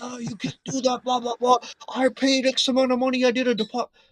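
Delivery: acted-out, very high-pitched, indignant, outraged rant. Retelling how a guy started losing it: imitating someone losing it. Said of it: "this guy starts losing it".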